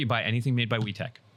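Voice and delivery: plain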